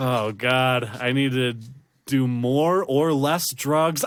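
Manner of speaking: plain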